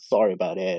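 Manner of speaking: imitated sadness. Retelling how Mom answered on the phone: imitating a sad tone. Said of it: "on a a sad tone".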